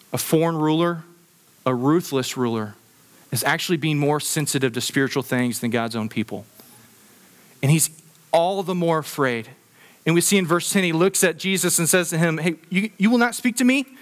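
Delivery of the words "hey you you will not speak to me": pitched-up, put-on irritation in every word. Acting out Pilate speaking to a silent Jesus: imitating irritated Pilate. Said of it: "there's irritation in his voice".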